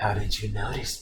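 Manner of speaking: creepy, low, very quiet, barely audible voice. Retelling a Naruto scene, the speaker voices Gaara in a creepy voice. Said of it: "With this creepy ass voice".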